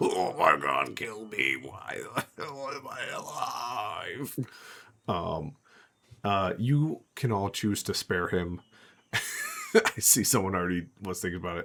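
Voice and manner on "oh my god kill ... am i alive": slow, silly, dumb-sounding orc monster voice. Game master voicing an orc the players can spare, dumb orc voice. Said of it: "keep making me make a stupid dumb voice".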